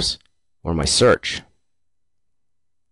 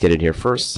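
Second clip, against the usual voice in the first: ordinary talk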